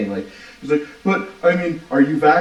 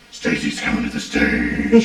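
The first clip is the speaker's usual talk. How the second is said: heavy metal style voice; 9 semitones higher than usual. Showing off a strip club DJ announcement in the metal voice: Batman voice. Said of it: "I had to do the fucking metal voice".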